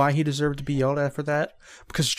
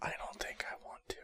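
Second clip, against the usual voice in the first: hushed whisper, quieter. Answering a joke about what the group did: whispering. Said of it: "Ben, stop whispering!".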